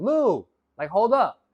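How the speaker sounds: loud high-pitched screaming. Retelling an imagined friend calling out from behind while running: imitating friend screaming. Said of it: "him screaming at me saying".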